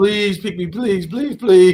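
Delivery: high, whiny, pleading, repeated begging tone. Picturing a player who begs to be picked: imitating someone begging. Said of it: "beg and say".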